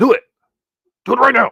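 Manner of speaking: very high, raspy, rough, angry shouting. Speaker tells viewers to go like the channel, in an angry voice. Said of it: "that's my angry voice".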